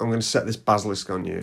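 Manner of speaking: usual speaking voice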